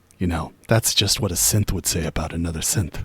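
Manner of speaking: very hushed, very quiet stage whisper. Voicing a character who tries to whisper but is too loud: too-loud stage whisper. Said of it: "in a voice that's too loud, but he's trying to keep it to a whisper".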